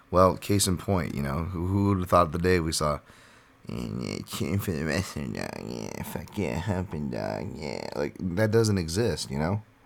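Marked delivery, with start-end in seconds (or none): 3.6-7.8 put-on fighter voice, cheering, lower and quieter. Imitating a fighter cheering for a wrestler: Nate Diaz impression. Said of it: "There's your Diaz impression".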